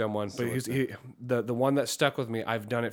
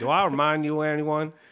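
bad fake southern drawl, half-hearted, pitched up, loud; 4 semitones higher, 5 dB louder than usual. Playing a game of asking a question in an accent, half-assed southern drawl. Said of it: "my half-assed attempt at a southern drawl".

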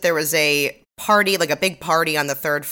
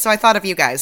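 plain

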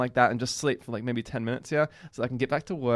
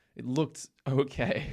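okay stretched out slowly.

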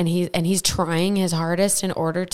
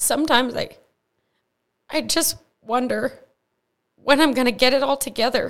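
voice tearing up, higher pitch; 6 semitones higher than usual. Talking about struggling with faith, starting to cry. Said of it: "Sorry, I'm starting to cry".

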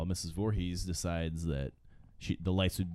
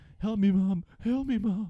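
mock very high-pitched, loud desperate yelling; 6 dB louder than usual. Recapping a movie flashback of Jason drowning, imitating Jason yelling for help. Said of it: "yelling for his mom".

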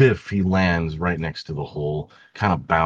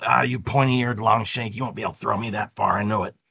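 taunting goblin character voice; 4 semitones higher than usual. Voicing a goblin who taunts a player before being thrown: goblin character voice. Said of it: "The goblin, you walk up and says".

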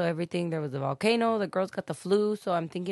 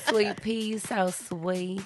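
exaggerated put-on southern drawl; 2 semitones higher than usual. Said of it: "We love your southern accent".

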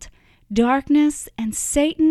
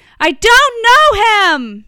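very loud, very high, drawn-out screaming cry; 10 semitones higher, 10 dB louder than usual. Narrator voicing Peter as he grabs his head, screaming. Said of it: "Peter grabbed his head and screamed".

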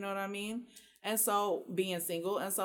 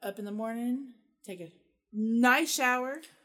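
loud, leaning in, savoring each bit; 3 semitones higher, 7 dB louder than usual. Answering what to do on christmas with nothing planned: a little too slow. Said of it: "you said that a little too slow".

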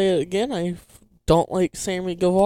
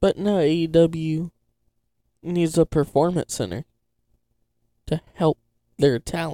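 sarcastic, mock-serious tone throughout; 2 semitones lower than usual. Commenting on a wrestler's training, sarcastic tone. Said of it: "You can tell my sarcasm".

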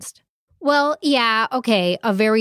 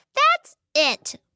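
very high, angry, squeaky voice. Reading a story where Mouse has finally had enough: Mouse squeaking angrily. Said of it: "she squeaked angrily".

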